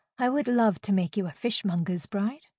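usual speaking voice

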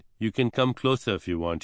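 ordinary delivery

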